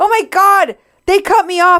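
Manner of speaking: high, loud mock scream.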